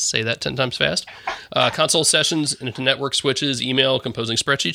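ordinary delivery

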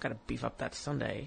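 muttering under the breath. Quoting a woman who topped up a sundae between takes, muttering under her breath. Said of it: "under her breath".

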